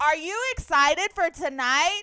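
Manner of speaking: put-on very loud, high, patronizing talking-to-a-child voice. Imitating interviewers on the red carpet: imitating talking to a small child. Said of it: "You don't have to be like".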